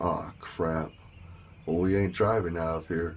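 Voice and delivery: ordinary talk, nothing marked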